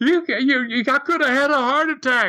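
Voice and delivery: put-on high scream. Retelling how Bemis got up pissed after the others laughed, imitating Bemis screaming. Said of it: "he's screaming".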